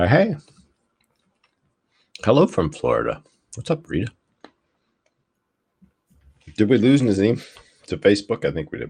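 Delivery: talking with mouth full. Live streamer greeting viewers, talking with a caramel in the mouth. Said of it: "I have a caramel in my mouth right now".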